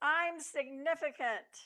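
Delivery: high, acted-out screaming cry. Retelling a comic strip where Calvin faces the night sky: imitating Calvin screaming. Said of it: "he screams".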